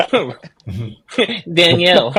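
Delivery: put-on French accent.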